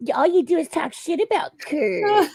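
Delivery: very high, shrill, spiteful, mean little witch voice. Retelling what chat users said: imitating a mean witch voice. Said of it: "That was a really good voice".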